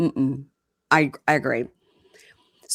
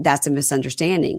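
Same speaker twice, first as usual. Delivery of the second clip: usual speaking voice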